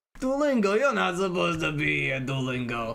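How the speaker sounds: bad, terrible put-on Italian mobster accent. Going live, the speaker finds Duolingo on screen and scolds it, terrible Italian accent. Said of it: "why am I talking with a terrible Italian accent?".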